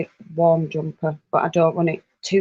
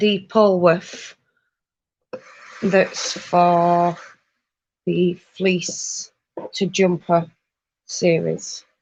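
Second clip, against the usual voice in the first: very slow, halting, word-by-word delivery. Speaker forcing out a hard-to-say phrase, said really slowly. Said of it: "I had to say that really slowly".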